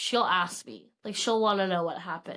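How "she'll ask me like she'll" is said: usual speaking voice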